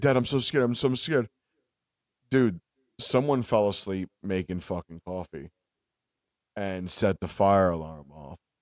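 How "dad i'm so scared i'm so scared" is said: mock-frantic, put-on panic at a faster pace. A dad retells his daughter's phone call to him, imitating frantic panic. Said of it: "Lily calls me frantic".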